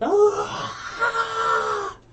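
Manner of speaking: high, loud, pained scream of agony.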